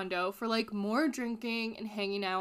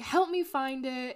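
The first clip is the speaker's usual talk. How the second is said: put-on panicky, slow, drawn-out, freaked-out yell; 3 semitones higher than usual. Retelling a woman in a hot tub looking for her purse: imitating someone yelling. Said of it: "yelling at everyone".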